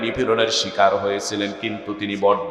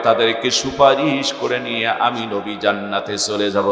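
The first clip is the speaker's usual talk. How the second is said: usual speaking voice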